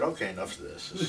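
plain

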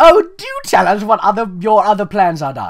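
very loud, posh, sing-song high-society voice, British hint. Reading a story aloud, voicing Rarity with a high society hint of British accent. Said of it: "in the high society with a hint of British accent".

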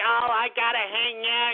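slow, derisive, mocking little fruity voice. Mocking a caller who hung up, imitating the caller's voice. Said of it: "confronted by their little fruity-ass voices".

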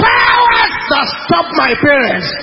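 fierce, violent, very loud shout. Leading a prayer for others to repeat: violent shouted declaration. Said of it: "declare this with a violent voice".

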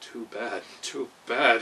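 slow, rueful, regretful mutter. His Majesty, his anger cooled, speaks: muttering regretfully. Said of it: "he muttered regretfully".

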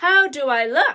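plain reading voice

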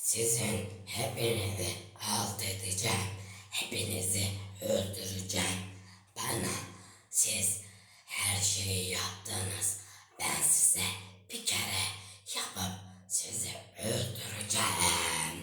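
put-on throaty cartoon character voice. Showing friends a voice impression, the speaker does a throaty cartoon character voice. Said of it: "şuramdan konuşarak bir çizgi film karakteri".

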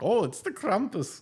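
put-on German accent, pitched very high. Looking at a Christmas card photo, the speaker mocks the German in it, imitating the German. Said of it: "Look at the fucking German, like".

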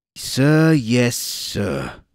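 very loud, shrill squawking voice. A man answers a woman aiming a gun at him, squawking. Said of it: "He squawked".

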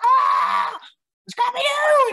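put-on very high, thrilled kid's excited yell. Retelling seeing scrappy-doo in the theater as a little kid: imitating own excited childhood shout. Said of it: "freaking out".

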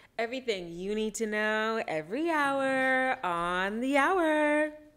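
on-air station announcer delivery, radio voice. Plugging her Instagram, the speaker signs off in her radio voice. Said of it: "Catch me using my radio voice".

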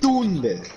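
first syllable Tun in Tunde leaned on. Correcting how a name is pronounced: stress on first syllable of Tunde. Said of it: "you gotta put the emphasis on the U".

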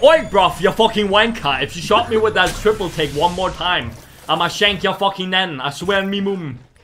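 put-on furious tone. During a chaotic match, voicing what the player they shot is saying: imitating an angry player. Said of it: "He's so pissed. He's saying".

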